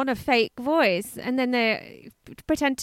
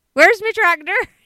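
put-on high, loud West Country yokel accent. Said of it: "give us some West Country".

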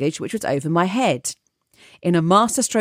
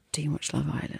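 whispered, very hushed tones; 3 semitones lower, 11 dB quieter than usual. Retelling a parent asking another parent at playgroup: imitating hushed tones. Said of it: "in very hushed tones".

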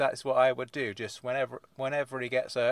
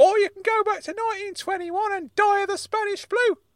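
put-on high, angry older man's voice. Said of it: "Uncle Claude has got so angry".

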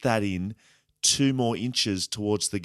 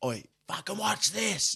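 put-on yelling, much higher pitch; 10 semitones higher, 4 dB quieter than usual. Retelling taunting a player from too far away to talk, retelling own yelling. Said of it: "Like yelling at him".

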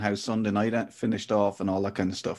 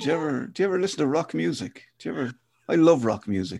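put-on priest voice, much higher pitch; 5 semitones higher than usual. Joking in a chat, playing a cool priest from Father Ted. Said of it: "like I'm a cool priest from Father Ted going".

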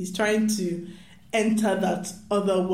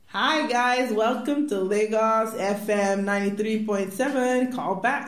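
put-on American radio DJ accent; 3 semitones higher than usual. Imitating a Nigerian radio host greeting listeners, in an American radio-host accent. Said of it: "an American accent is an essential part of being a radio host".

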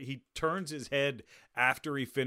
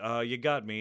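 put-on detective voice, laughing. Retelling a film scene where Clouseau laughs: imitating Clouseau laughing. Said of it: "just kinda laughing like".

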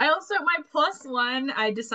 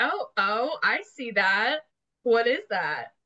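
put-on curious, gossipy old lady voice, slower; 4 semitones higher than usual. Player in character, pointing at something with a conspiratorial look: curious gossipy old lady voice. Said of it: "I'm curious old lady who loves to gossip".

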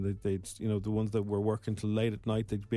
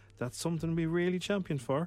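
put-on local Cork accent, pitched up a bit; 7 semitones higher than usual. Quoting publican Michael from the Cork Vintners Association, imitating Michael's Cork accent. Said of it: "That's a very good Cork accent".

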